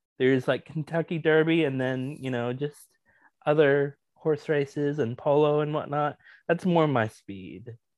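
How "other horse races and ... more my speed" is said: plain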